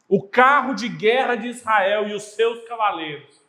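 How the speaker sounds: shouting.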